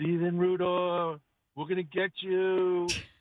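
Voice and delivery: slow, eerie, ghostly spirit voice. Retelling a prank on a neighbor from a hidden attic: spooky spirit voice. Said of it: "in a very spiritual voice said".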